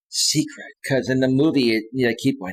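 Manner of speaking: usual speaking voice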